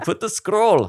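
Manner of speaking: put-on high, loud South African accent. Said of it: "that's what South African is".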